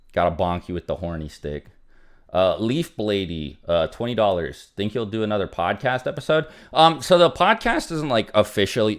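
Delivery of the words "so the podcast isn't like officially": voice cracking upward mid-phrase. Answering a viewer's donation question, voice cracking. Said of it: "My bad for the voice crack".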